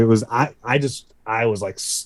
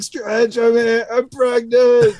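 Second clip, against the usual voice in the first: put-on very high, rising, drunken hollering yell; 12 semitones higher than usual. Retelling a drunk friend yelling at a show: imitating a drunk friend yelling. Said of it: "super hammered".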